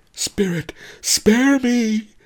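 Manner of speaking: very high-pitched, wailing, howling cry. Pawnbroker Fang, kneeling before the patron of ginseng, howls out. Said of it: "howled pawnbroker Fang".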